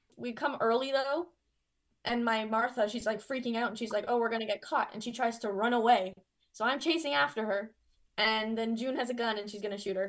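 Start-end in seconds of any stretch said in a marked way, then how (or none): none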